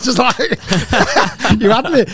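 laughing, high-pitched and loud.

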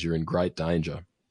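ordinary talk

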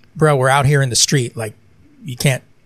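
plain

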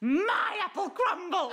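loud, very high, shrill squawk. Recounting flinging apple crumble into her costume chest, quoting herself: squawking. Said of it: "I literally squawked".

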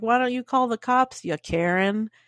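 ordinary talk

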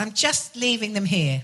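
put-on heavy Liverpool accent. Quoting what Chrissy Rock said to the speaker, in a thick Scouse accent. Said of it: "with a very thick Scouse accent".

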